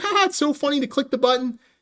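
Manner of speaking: goofy, silly voice, laughing through the words. Retelling a guy in the theater who kept clicking his chair button, imitating a giggling guy. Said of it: "And he was giggling".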